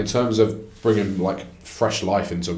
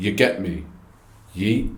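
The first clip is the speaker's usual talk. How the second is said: mocking, put-on wrestler promo style of speaking. Mocking how a wrestler delivers his promos: imitating his promo delivery. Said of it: "'cause he speaks like this".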